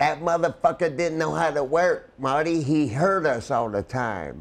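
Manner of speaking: put-on country drawl. Retelling what a wrestler used to say about a partner: imitating Honky Tonk Man's country voice. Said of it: "he got that country, and I know I got a country voice, but he would say".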